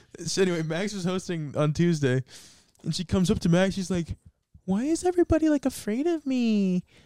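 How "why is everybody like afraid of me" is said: very high-pitched woman's voice. Retelling what a woman asked Max, in an impression of her. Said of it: "that was actually a pretty good impression".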